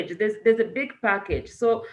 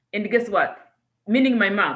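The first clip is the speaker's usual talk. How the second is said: ordinary talk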